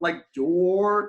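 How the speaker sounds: stretched-out word 'door'. Retelling how a guy stretched out a short word: drawn-out 'door'. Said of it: "he just elongated a four letter word".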